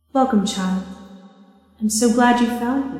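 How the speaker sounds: warm, motherly elf woman voice. Voicing an elf woman who welcomes a player: maternal elf woman voice. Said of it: "and this woman says to you".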